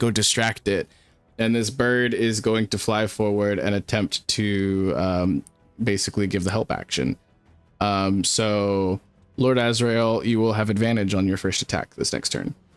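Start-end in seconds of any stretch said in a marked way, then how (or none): 0.0-0.9 soft, hushed whispering. Speaking as her character, pointing a bird forward, whispering. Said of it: "she like whispers to it".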